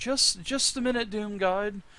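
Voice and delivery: high feminine voice. Narrating a scene, voicing Cassit answering from inside the catacomb: Cassit's feminine voice. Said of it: "a feminine voice".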